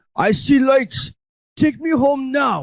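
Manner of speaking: rough, poor, very high Russian voice. Quoting a movie character after naming the actor: poor imitation of the russian man. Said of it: "just my poor imitation of".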